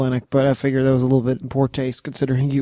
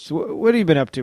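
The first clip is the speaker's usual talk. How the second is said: ordinary talk, nothing marked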